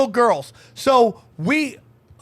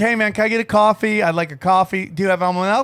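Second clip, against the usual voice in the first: ordinary talk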